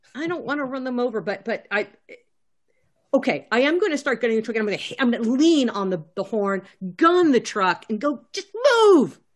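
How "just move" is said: very high-pitched, frantic yelling. Gunning the truck and leaning on the horn: yelling. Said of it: "and just yell".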